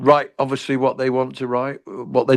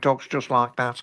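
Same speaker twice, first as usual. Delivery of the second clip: put-on Brummie accent, spoken more quietly; 6 dB quieter than usual. Speaker describes a character he created, then goes into its voice: Chris Phipps Brummie voice. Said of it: "I have to go into the voice now".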